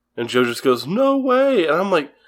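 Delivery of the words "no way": put-on very high child voice, pitched way up. Retelling the child Joe's doubtful reply in the scene: imitating Joe's child voice actor. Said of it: "your child voice actor impressions were on point".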